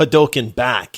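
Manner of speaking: ordinary delivery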